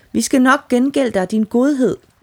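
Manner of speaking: high, grateful, loud calling out. Narrator reads freed creatures calling up from the water to their rescuer: shouting. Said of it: "stak hovederne op af vandet og råbte".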